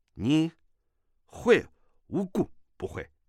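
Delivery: gruff, rough, coarse voice. A guest answers an old woman after a snort, in a gruff rough voice. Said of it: "粗声粗气地说".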